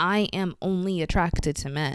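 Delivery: ordinary delivery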